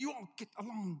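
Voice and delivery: put-on choppy, agitated staccato, very high and loud. Act out Paul speaking like a parent, as an agitated parent in a staccato voice. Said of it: "He does it in this staccato voice".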